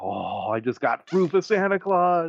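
mock thrilled, excited, high sing-song little kid gushing. Retelling the speaker's son's reaction after watching Santa, imitating his excitement. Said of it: "he's all excited about it".

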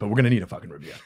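slightly annoyed, a little angry edge. Podcast host asking listeners to send reviews, sounding a little angry. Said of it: "You sound a little bit angry".

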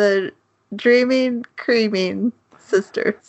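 giggling, laughing through words, barely holding together. Naming characters from a show, laughing while talking. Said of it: "I can't say it without laughing".

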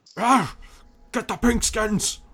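shrill, very high, very loud barking orc shout. As they close in, the orc giving the orders shouts out: orc shouting orders. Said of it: "just shouts out".

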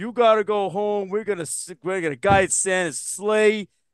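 put-on Brooklyn accent. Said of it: "Why are the reindeer from Brooklyn?".

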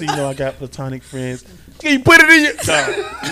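grave, very low, earnest and serious voice. Telling the group what Jessica said, imitating Jessica's serious voice. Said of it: "Jessica was all in her serious voice".

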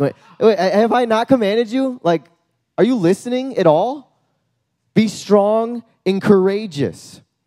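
mock sassy sarcasm. Speaker retelling God's words to Joshua, as sassy God. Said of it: "I love when God is sassy".

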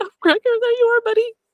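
mock, very high, excited squeal. Retelling own reaction on seeing Gregor appear: retelling own scream. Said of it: "and I screamed".

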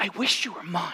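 hushed, half-whispered stage whisper, almost no voice. Telling listeners what God says to them: imitating a half-whisper. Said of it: "He whispers this over your life".

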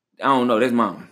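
plain

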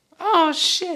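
put-on high baby-like voice.

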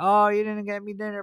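play-acted teasing complaint. Retelling a joking remark to mom at dinner, retelling a joking complaint. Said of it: "I like jokingly tell my mom".

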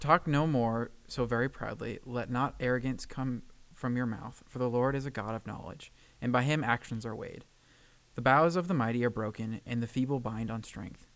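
ordinary talk, nothing marked

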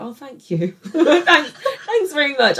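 very high, put-on, forced polite tone. Retelling a reply to patronising patients: imitating her own forced polite thanks. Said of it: "I'll just be like".

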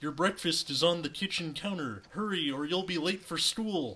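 high cartoon frog-puppet voice. Narrator reading a story voices the mom telling Alex to hurry: Kermit the Frog voice. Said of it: "the mom is going to be Kermit the Frog".

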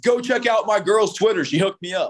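sarcastic mock tone. Mocking the tone of dumb tweets, mocking stupid tweet tone. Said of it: "I want to start mocking like the tone of those fucking stupid ass tweets".

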